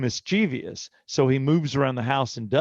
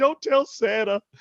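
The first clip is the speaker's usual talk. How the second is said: imitated child crying while talking, higher pitched, tearful; 9 semitones higher than usual. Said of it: "he's crying and talking".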